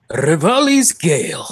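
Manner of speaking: smug, talking-down delivery. Saying a move name on request: cocky, condescending voice. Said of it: "the cocky, condescending voice".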